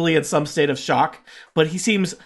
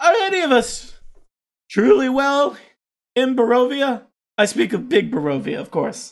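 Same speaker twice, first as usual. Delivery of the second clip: put-on fatalistic, pitched-up old man character voice; 8 semitones higher than usual. Game master voices the coffin maker answering a player's question: old coffin maker voice. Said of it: "This is the old carpenter coffin maker here".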